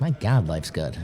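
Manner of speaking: ordinary talk, nothing marked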